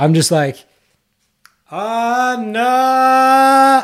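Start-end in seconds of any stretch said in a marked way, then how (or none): 1.7-3.8 put-on very high, drawn-out, top-of-the-lungs yell. Recounting calling a woman's name across a crowded mall, retelling a yell. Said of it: "at the top of my lungs".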